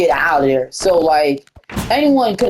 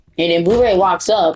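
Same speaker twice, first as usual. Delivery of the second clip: usual speaking voice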